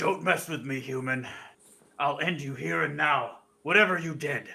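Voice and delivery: loud, booming, thunderous voice. Player's character, vanished in mist, warns a human in a booming voice. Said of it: "make my voice booming".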